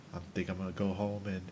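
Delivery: level, toneless voice. Imitating Leon answering a question about what he'll do: monotone Leon voice. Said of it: "The most monotone voice ever".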